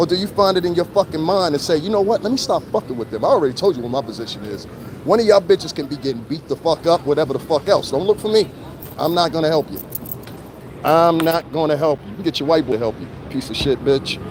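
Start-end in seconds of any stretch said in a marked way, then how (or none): none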